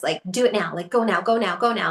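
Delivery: put-on anxious, urgent-sounding voice. Describing how her ego urges her on, imitating an anxious inner voice. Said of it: "she's like anxious".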